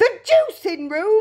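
high, sudden cry, pitched way up. Narrator reads a woman's reply to an order about her daughter, crying out. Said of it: "cried Mrs. Beauregard".

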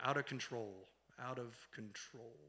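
very slow, low, hushed voice with drawn-out words. Retelling how Tim repeated a girl's words back to her, imitating Tim's slow speech. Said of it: "he speaks very slowly".

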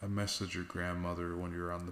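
plain

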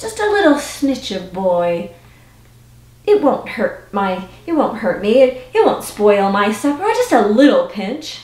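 ordinary delivery, nothing marked

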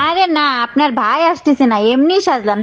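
high put-on woman's voice.

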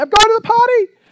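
put-on very high, very loud child's hollering yell. Parent retells the kids yelling back while running past, imitating a child yelling. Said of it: "And they'll yell back at me".

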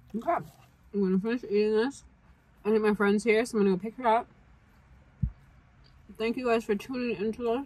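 talking with mouth full. Wrapping up a food video for viewers, talking with mouth full. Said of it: "I'm sorry for talking with my mouth full".

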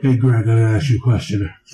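very low, deep, dropped-down voice. Imitating the caller greeting Greg: Jim Florentine voice. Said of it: "But that's Jim Florentine voice".

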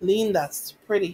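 flat, toneless voice. A mother answers her daughter who is holding up pink t-shirts, in a flat voice. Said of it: "her voice flat".

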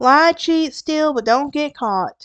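put-on country-sounding southern accent. Telling Lyle's story, quoting the rule Jose taught him: southern accent coming out. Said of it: "My southern accent was coming out".

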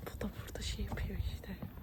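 soft, quiet whisper.

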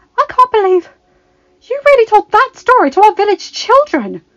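very high, loud, incredulous voice. Belle reacts to the tale a woman has just told, incredulous. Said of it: "She asked incredulously".

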